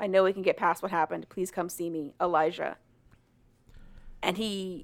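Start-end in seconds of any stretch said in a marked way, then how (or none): none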